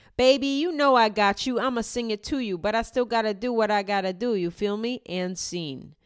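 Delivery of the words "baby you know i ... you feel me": mocking put-on American street accent.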